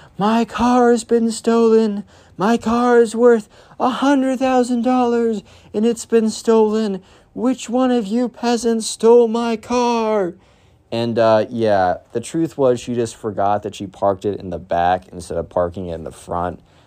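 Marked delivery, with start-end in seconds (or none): 0.2-10.4 very high, shrill, mock entitled screaming. Retelling how a mom was heard yelling at school pickup: imitating someone screaming. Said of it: "screaming about".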